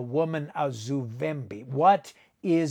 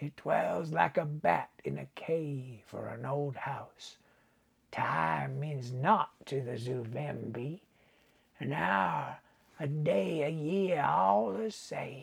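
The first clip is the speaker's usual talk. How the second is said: put-on rich, mellow old man voice; 6 dB quieter than usual. Narrator reads the old voodoo man's words, in a mellow, rich old man's voice. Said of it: "But the old man's head was sunk on his withered breast, ... It was as if the name penetrated the fogs of senility that clouded the voodoo man's mind. ... and his voice was mellow and rich".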